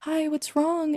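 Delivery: tiny, small, meek, timid, very high voice. Describing how she switches voices in his room, mimicking her little timid voice. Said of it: "that like little timid voice".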